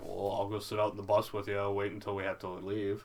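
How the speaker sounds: ordinary talk, nothing marked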